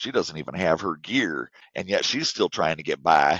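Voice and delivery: rough, badly done Kentucky accent. Describing the opening where Bess does the voiceover, in a terrible Kentucky accent as Bess. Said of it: "that's my terrible Kentucky accent".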